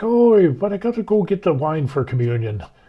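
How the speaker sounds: put-on Irish accent. Retelling what the priest told the police: Father O'Malley's Irish accent. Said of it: "he had the accent and everything".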